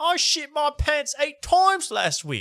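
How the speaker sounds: fake, clumsy British accent, very high. Mocking a woman who tries to be one of the boys; bad fake british accent. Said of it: "I do her fake bad accent".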